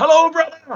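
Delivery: big, gruff, very high, loud call. Game narrator voicing a brother who recognises you across a bar, big gruff hail. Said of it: "Gets up with a big gruff hail".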